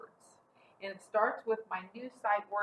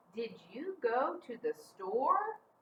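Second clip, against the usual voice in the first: rising pitch on the word "store"; 3 semitones higher than usual. Pronunciation lesson, asking a question with rising question intonation. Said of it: "I heard my voice go up. I'm asking a question".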